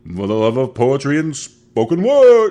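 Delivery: loud, slow, big, unhurried show host announcer voice. Showing listeners how the guy who does the poetry show talks, in a Saint Clinton impression. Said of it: "that's my Clinton impression".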